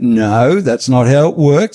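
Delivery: put-on calm, even, matter-of-fact Australian accent. Recounting going toe-to-toe with a man over a program, retelling a calm aussie reply. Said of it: "in my calm Aussie way".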